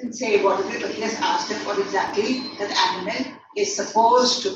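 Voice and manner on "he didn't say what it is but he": usual speaking voice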